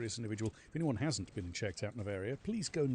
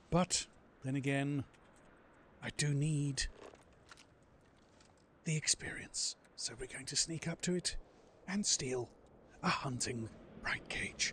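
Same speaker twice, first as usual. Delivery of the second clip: put-on nature-documentary narrator voice; 3 dB quieter than usual. Playing a game after a viewer redeems it: David Attenborough voice. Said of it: "the voice I use when someone redeems David Nottingborough".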